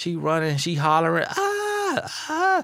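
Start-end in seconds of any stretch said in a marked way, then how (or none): 1.3-2.6 high, shrill zebra cry. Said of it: "in their zebra voice".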